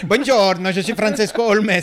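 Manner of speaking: fake Italian accent. Joking with friends about a name, introducing himself in a bad italian accent. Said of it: "un mauvais accent italien".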